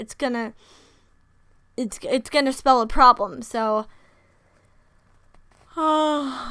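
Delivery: words spoken through a yawn. A speaker recapping a story's plot, yawning mid-sentence. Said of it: "I'm just yawning".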